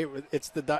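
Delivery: ordinary talk, nothing marked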